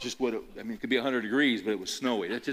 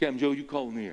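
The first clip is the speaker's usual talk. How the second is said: put-on deep, strong Southern accent; 3 semitones higher than usual. Retelling a coin toss, imitating the football official in a deep Southern accent. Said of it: "They got this real deep southern accent".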